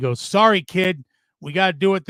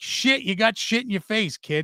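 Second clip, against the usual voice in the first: put-on heavy Boston accent, laid on thick; 4 semitones higher than usual. Retelling what a man said while pinning the speaker, in a thick boston accent. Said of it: "in his thick Boston accent".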